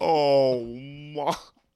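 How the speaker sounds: grungy, loud, bullfrog-like croaking voice. Reacting to a grungy sight, bullfrog-like voice. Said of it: "Why did you sound like just a, a bullfrog?".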